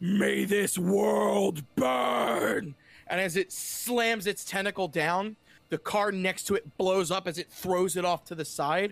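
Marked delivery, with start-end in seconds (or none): 0.0-2.7 loud, very slow, rough monster rasp. Voicing a transformed tentacled creature whose allies lie dead: monster voice. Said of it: "And it says".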